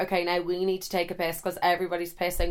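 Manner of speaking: normal talking voice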